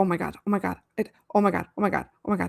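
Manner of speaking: mock frantic, fast, rattled-off, looping panic. Retelling waiting hours for a reply after setting a boundary: imitating own panic. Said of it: "the panic that I was in".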